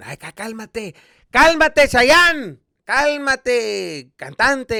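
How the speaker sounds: mock teasing scold. Retelling what a dad says when told about a sore voice: imitating dad scolding. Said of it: "that's what my dad says all the time".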